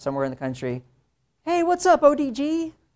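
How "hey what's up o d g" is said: high, loud, mock-casual voice. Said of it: "emails I get a week from a student".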